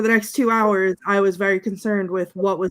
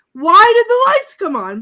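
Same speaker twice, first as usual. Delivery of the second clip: very high, loud hysterical shriek; 13 semitones higher, 9 dB louder than usual. Retelling crying at a show when the lights came on: retelling own scream. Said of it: "I was screaming".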